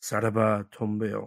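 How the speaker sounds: put-on muttering. Retelling a trivia contest answer said quietly, imitating muttering under breath. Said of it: "under my breath".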